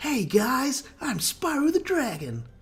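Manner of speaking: very high, very slow, drawn-out, cocky swagger. Answering a request to do an impression: Spyro impression. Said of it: "Can you do a Spyro impression?".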